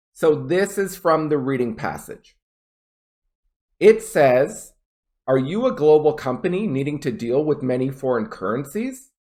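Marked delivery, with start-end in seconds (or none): 5.3-9.1 voice climbs on last word currencies. Reading a yes/no question from the passage as an example, rising intonation on currencies. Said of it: "Notice I went currencies".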